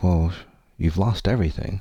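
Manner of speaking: usual speaking voice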